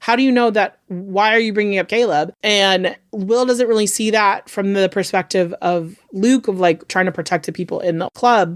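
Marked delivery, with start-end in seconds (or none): 0.0-2.3 mock panicky, panicked, demanding voice. Retelling a show scene where a character panics: imitating panicked Luke. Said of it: "Luke panics 'cause he's like".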